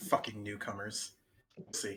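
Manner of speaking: through gritted teeth. Voicing a character who looks at his clothes: through gritted teeth. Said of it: "kind of grinds his teeth a bit and he says".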